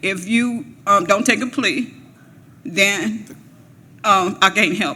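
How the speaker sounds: ordinary delivery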